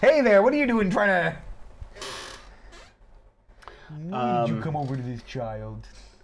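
lively, animated delivery with wide sweeping pitch. Imagining Chris Hansen suddenly popping out: Chris Hansen impression.

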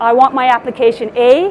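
ordinary talk

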